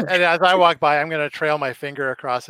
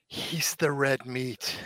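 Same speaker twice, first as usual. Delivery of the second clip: very quiet, hushed whisper close to the ear; 10 dB quieter than usual. Speaker leans over and whispers into a companion's ear about a nervous kid: whispering. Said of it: "and I lean over and whisper in Charlie's ear".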